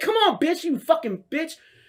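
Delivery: very high, taunting yell. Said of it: "I'm waving him on".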